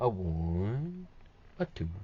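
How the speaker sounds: one drawn out, softly swooping pitch. Counting out loud while showing a craft step, Tootsie Pop owl counting voice. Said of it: "I sound like the Tootsie, Tootsie Pop owl when he's counting".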